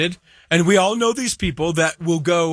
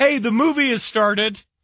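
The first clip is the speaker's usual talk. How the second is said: pointedly polite, passive-aggressive, higher-pitched tone; 6 semitones higher than usual. Describing how they'd hint to a disruptive moviegoer: mock passive-aggressive tone. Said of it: "a passive aggressive of".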